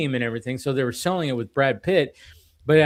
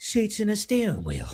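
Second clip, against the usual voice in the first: tossed-off, purely sarcastic, pitched-up delivery; 8 semitones higher, 4 dB quieter than usual. Quoting a favorite movie line: quick Jason Statham delivery. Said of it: "So quick".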